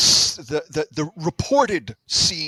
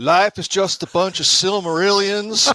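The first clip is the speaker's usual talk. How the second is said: clumsy, bad fake Southern accent; 3 semitones higher, 4 dB louder than usual. Next player [name] delivers his line in a bad Southern accent. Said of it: "that might be a worse Southern accent than yours".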